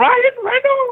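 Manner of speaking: very high-pitched, full, proper scream. Told to scream a name properly, let it out screaming like a Monty Python woman. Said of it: "Scream it then properly".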